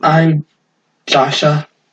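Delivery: small, gentle little character voice. Playing the little tiefling in a role-play scene, introduce yourself in a softer voice. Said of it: "the little tiefling speaks in kind of a softer voice".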